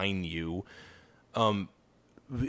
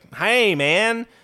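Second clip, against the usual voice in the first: high, loud, mocking nerdy put-on voice. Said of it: "Have you ever heard him speak?".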